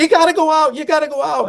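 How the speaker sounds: put-on screaming, very high pitched and shrill. Telling Phil how you reacted while reading the book, retelling your own screaming. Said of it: "I was screaming at the book".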